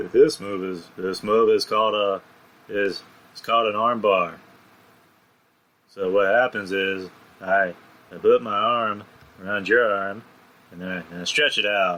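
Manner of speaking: dead-level, flat monotone delivery. Imitating how a man talks when explaining, flat monotone delivery. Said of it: "he sounds very monotone. Like he's he's like".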